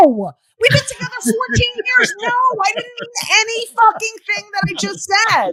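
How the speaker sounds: high, exasperated tone.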